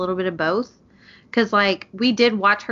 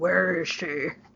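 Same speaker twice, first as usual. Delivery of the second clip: dark, hushed, soft superhero voice; 5 dB quieter than usual. Describing a show character's dark voice, imitating him in a Batman voice. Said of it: "He does sound like Batman".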